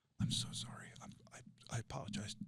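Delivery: put-on cowering, tearful, weepy, barely whispered, slow. Retelling how he apologized to a man screaming in his face: retelling a weeping apology. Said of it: "like a minion with his ears back, weeping".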